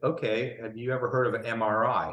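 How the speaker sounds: usual speaking voice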